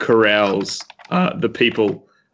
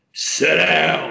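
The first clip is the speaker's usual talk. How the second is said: rough, high roaring bellow, down dragged out; 7 semitones higher than usual. During a tabletop game, a player speaks as Bamfor, bellowing. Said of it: "Bamfor bellows".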